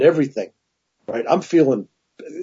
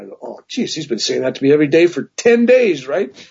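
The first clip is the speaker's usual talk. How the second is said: normal talking voice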